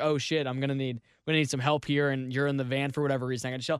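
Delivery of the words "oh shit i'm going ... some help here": usual speaking voice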